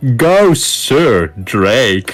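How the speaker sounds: loud, very mocking, jeering sneering taunt. A voice is suddenly heard in the story calling out, very mocking. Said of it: "in a very mocking voice".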